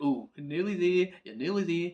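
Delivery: reassuring, soothing, coaxing chairside dentist voice. Speaker noticing they sound like a dentist and repeating it, dentist voice. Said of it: "why do I sound like a dentist".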